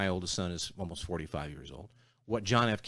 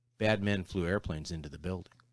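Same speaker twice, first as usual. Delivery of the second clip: usual speaking voice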